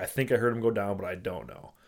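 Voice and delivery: ordinary talk, nothing marked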